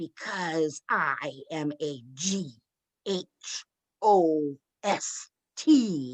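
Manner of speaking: very slow, drawn-out, growly ghost voice. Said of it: "in that growly again".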